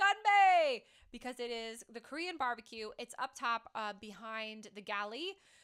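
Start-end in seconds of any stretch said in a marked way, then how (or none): 0.0-0.8 shrill, high, very loud shout. Naming the Korean barbecue that you should always yell: yelled Gunbae. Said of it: "you should always yell it".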